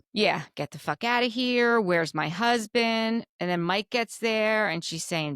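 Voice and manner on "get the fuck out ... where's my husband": plain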